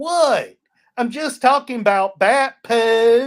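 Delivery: put-on very loud, heavy Southern accent, "poop" drawn out. Retelling a man's reply after being told to mind his language in church, strong Southern accent. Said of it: "southern accent that's so strong".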